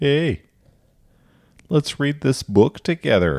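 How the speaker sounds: put-on South Dakota accent, very high and loud. Recalling reading a book aloud to others, in a South Dakota accent. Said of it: "I read like a book in a South Dakota accent".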